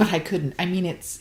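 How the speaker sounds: plain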